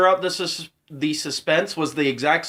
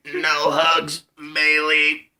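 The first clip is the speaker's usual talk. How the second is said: acted smoker's voice. Joking about a wrestler getting no hugs today: Stephanie voice. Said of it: "I gotta do it in Stephanie voice".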